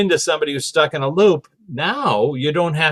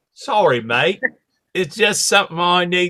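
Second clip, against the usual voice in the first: put-on British accent; 3 semitones higher than usual. Retelling what a ghost said to him in the room: british accent. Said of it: "he was British".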